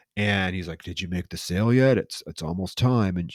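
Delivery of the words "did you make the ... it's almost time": sinister, menacing, ominous, threatening voice. Retelling a movie scene, quoting the boss on the phone: imitating a sinister voice. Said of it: "now very sinister sounding boss".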